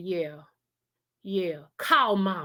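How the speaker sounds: slow, angry, pissed-off tone. Retelling the brother's words at the door, imitating an angry brother. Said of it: "He was pissed".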